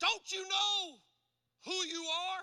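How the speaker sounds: mock anguished outcry, high, loud and drawn out. Recounting getting mad at her and screaming out, retelling an anguished scream. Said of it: "I screamed out to her in anguish".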